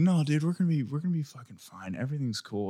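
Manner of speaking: play-acted laid-back, relaxed, unbothered, easygoing tone. Retelling a phone call with a friend in a crisis: imitating a calm friend. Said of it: "Why do you sound like this?".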